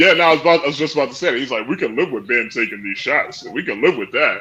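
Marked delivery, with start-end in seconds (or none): none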